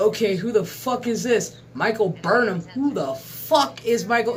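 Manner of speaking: ordinary talk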